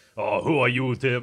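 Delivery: rough, condescending, talking-down put-on voice. Imitating Arnold Schwarzenegger talking down to Tim: Arnold Schwarzenegger impression, condescending. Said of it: "I can't even do it right".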